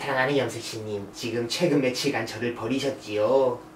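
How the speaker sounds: low, soft, solemn, grave voice. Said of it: "그분을 모시겠습니다".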